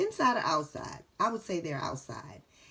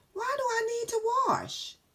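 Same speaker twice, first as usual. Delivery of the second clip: rising question tune at the end on wash. Reading a book's title aloud to listeners, with rising question intonation. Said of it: "changed my voice to just go up a little bit".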